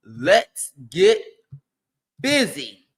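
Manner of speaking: put-on comedy character voice, low and swooping. Predicting what the team will do this morning, the speaker uses a Nutty Professor voice. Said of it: "In my nutty professor voice".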